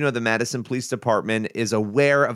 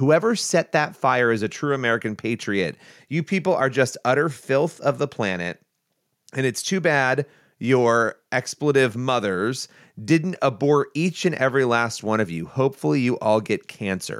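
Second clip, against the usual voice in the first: ordinary talk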